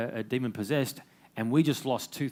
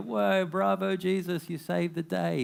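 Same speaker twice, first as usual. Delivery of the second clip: high, rousing, jubilant cheer; 7 semitones higher than usual. Acting out what crowds would cheer after a legendary rescue: imitating a cheering crowd. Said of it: "the crowds to come and cheer".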